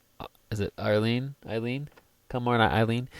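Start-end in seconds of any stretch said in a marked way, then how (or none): none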